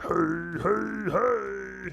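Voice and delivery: rough, creaky orc monster voice, stretched-out "hey"s. Greeting the audience in an orc voice. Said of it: "my orc voice sounds like Fat Albert".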